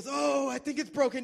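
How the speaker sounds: play-acted very high, loud, hurting wail. Retelling what an injured man said, imitating someone in pain. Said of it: "he's in a lot of pain".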